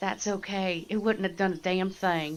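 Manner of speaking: hushed whispered speech. A tabletop player voices her character answering another character, whispering. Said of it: "She'll whisper back".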